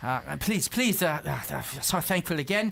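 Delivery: put-on grateful, thankful old voice. The narrator voices the town's magistrate thanking the arriving visitors: Rika's voice. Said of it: "you just hear Rika's voice".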